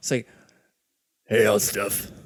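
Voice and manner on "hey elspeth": low, deep, gruff female dwarf voice. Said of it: "I got a deep voice".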